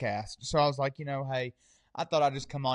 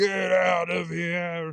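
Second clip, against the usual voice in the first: ghostly, very slow, drawn-out scream; 4 semitones higher, 3 dB louder than usual. Retelling a ghost screaming to get out: imitating a ghost screaming. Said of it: "she screamed it at me".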